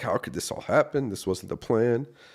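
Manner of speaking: high, loud, furious angry yell. Retelling being alone and yelling at the Lord: retelling yelling at God. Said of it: "I'm just yelling at the Lord".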